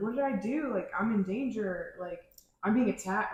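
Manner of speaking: usual speaking voice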